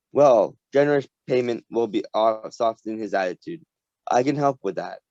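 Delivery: plain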